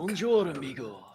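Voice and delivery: put-on Italian accent. Voicing the character in a greeting: Italian accent. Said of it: "why is he Italian?".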